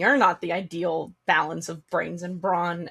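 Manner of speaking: fast mutter, half under the breath. A player speaks as their character before walking back into the room, half under breath. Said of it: "half under my breath".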